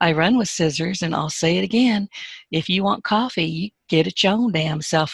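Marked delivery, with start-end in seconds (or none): 2.5-5.1 put-on southern drawl. Joking about refusing to fetch coffee, in a put-on southern accent.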